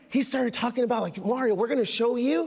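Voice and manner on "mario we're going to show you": usual speaking voice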